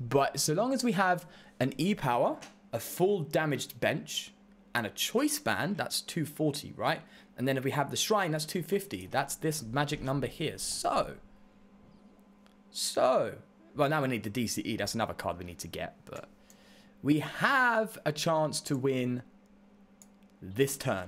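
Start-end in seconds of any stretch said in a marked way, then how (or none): 2.7-5.8 deliberately slow, careful delivery. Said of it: "I'll slow down".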